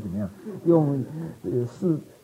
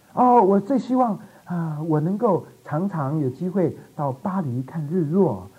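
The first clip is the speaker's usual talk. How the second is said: put-on pure, naive, guileless innocent young girl voice. Retelling a young woman's answer when asked what she wants, imitating an innocent girl's voice. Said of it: "用非常单纯的那一种天真无邪的声音".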